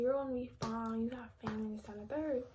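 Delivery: ordinary talk, nothing marked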